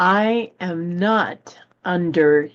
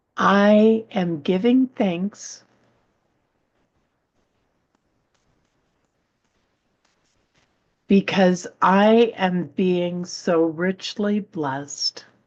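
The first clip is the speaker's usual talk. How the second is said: slower pace. Rereading an affirmation aloud for listeners to repeat: read slower. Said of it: "I'll read that slower".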